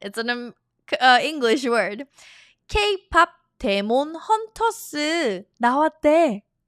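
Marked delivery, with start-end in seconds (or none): 2.7-6.4 put-on Korean accent, much slower. Repeating a korean example line in a practice dialogue, in a korean accent. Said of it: "I'm doing the Korean accent".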